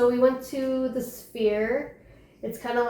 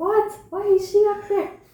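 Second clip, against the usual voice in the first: put-on jealous yelling, high and loud; 9 semitones higher, 5 dB louder than usual. Retelling a movie scene where a jealous girl yells at her mom: imitating someone yelling. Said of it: "yelling at her mom. She's like".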